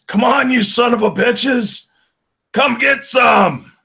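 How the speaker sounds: shrill, loud, high pitched taunting yell. Voicing a character yelling at a zombie crowd: yelling a battle taunt. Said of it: "Alvin just yells at him".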